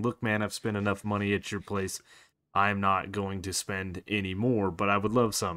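ordinary talk

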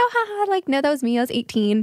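mock light, playful joking tone with laugh. Retelling a joking reply to a doorman checking an ID: imitating own joking reply. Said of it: "kinda, like, just, like, joking back".

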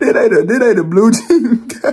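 talking through laughter. Reacting to someone on screen in overalls: laughing while talking. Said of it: "I don't know why I'm laughing".

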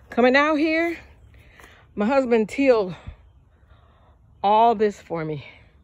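puffing, winded, short of breath. Greeting her family about the ground her husband tilled for her, out of breath. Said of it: "I'm out of breath".

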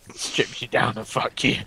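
hushed, menacing villain whisper. A player shows a friend the voice they use online in multiplayer; sounds like Bane. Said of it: "You sound like Bane".

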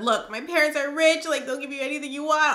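begging, pleading tone. Retelling a kidnapped girl begging her captors: retelling a pleading plea. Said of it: "begging and pleading with them".

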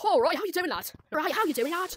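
put-on British accent. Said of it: "That's British".

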